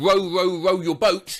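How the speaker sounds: ordinary talk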